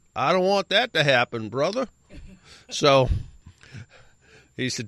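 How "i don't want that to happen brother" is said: put-on some kind of southern American accent. Quoting a man's reply while telling a story, southern accent. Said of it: "in some sort of southern accent".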